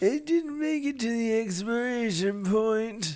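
put-on high-pitched old man voice. Joking around about a trip to the grocery store: old man voice. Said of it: "Your old man voice is much better than mine".

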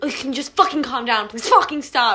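put-on aggressive tone. Retelling what she said to the speaker that morning, mock-aggressive. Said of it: "And that aggressively".

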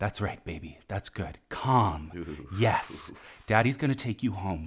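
sultry, sinister, low, hushed stage whisper. Retelling how a man kept talking to a dog, imitating a low near-half-whisper. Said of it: "He just keeps talking in this low, almost whisper, definitely erotic or maybe murderous voice".

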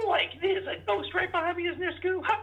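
very high, goofy, cartoon-style slacker voice. Asked how his Shaggy impersonation is, answering with a Shaggy impression. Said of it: "how is your Shaggy impersonation?".

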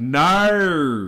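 put-on Australian accent, drawn-out no with added R. Showing how Australians say no with an R: Australian accent on 'no'. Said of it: "if you say no with an R, that's Australian. Like".

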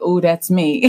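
ordinary talk, nothing marked

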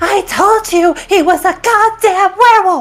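high-pitched, stretched, drawn-out shout. Voicing a character who shouts at Boris: shouting at Boris. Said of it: "she shouts at Boris".

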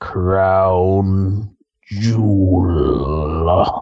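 very deep, low, stretched-out delivery. Saying an event name the way The Undertaker says it: The Undertaker voice. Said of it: "I like to say it like The Undertaker".

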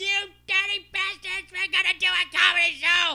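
play-acted very high, shrill, unhinged maniac shout. Retelling calling people to a comedy show: imitating his own maniac yell. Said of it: "just yelled like a fucking maniac".

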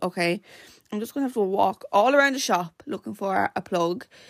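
plain

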